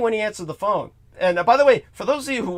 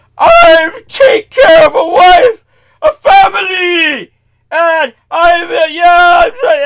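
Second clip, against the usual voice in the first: very high, very loud, drawn-out sobbing wail; 10 semitones higher, 11 dB louder than usual. Retelling a cab driver's words after he locked the door: imitating someone crying.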